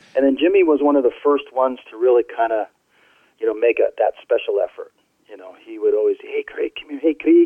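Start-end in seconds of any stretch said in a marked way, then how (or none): 6.2-7.4 put-on Scottish man's accent, higher-pitched. Recalling how Jimmy always called him over, imitating Jimmy's Scottish accent. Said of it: "because he was Scottish".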